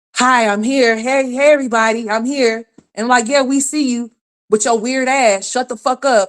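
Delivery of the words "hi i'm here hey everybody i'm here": acted-out loud, pitched-up calling out. Mocking the listener's gamer boyfriend in the background, imitating someone being loud. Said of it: "He just be in the background just so loud".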